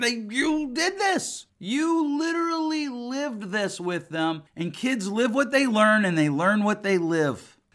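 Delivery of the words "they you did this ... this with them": slow, exasperated disbelief. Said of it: "And I'm like".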